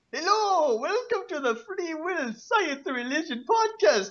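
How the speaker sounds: very high, goofy, silly put-on stupid voice. Podcast host opening the episode in a stupid voice. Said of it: "I am talking in a stupid voice right now".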